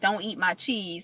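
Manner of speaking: dog-like growling voice. Retelling how the dog guarded her cheese from another dog: growling dog voice. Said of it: "she was growling at him like".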